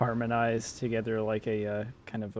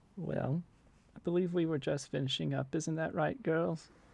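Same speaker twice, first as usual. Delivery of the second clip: soft, gentle matronly voice, quieter; 6 semitones higher, 4 dB quieter than usual. Storyteller voicing the witch addressing the mermaids, in a soft matronly voice. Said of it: "in kind of a soft sort of matronly voice".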